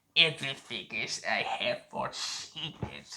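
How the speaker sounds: clumsy, overdone put-on rich, luxurious tone. Speaker praising Ian McDiarmid's return as the Emperor, doing a terrible Emperor impression. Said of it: "my terrible impression of the Emperor".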